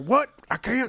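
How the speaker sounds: put-on Southern American accent. Imagining someone's reaction to a job listing, in a Southern accent. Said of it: "I can't go into my Southern accent".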